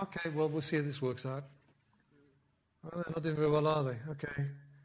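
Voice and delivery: detached, unbothered, idle shrugging-off musing. Mocking a common image of God watching things unfold: imitating a passive God. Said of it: "he's not passive".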